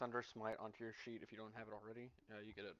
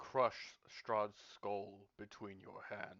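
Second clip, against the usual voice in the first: big, loud, booming voice; 5 dB louder than usual. A powerful entity answers a character asking how to gain its power: booming Tar Hawk voice. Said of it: "kind of a booming voice".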